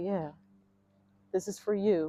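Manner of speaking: play-acted teary, weeping, crying voice. Retelling telling the children the new home is theirs: retelling tearful words. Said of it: "I just broke down crying".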